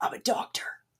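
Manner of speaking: gravelly, breathy, put-on whispered voice. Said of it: "he always talks in like this like gravelly".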